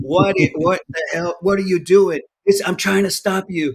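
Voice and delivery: mock yelling voice. Retelling what a probation officer screamed at them: imitating a yelling probation officer. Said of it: "probation officer that was screaming at you and cussing at you".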